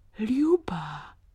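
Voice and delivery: teasing, playful and affectionate, tender tone. A man resolves to go to ljuba, saying her name with playful tenderness. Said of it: "řekl s rozpustilou něžností".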